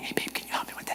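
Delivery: soft, very quiet whisper, barely voiced. A preacher saving his voice asks her for help; whisper. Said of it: "so I'll whisper, and I'll be like".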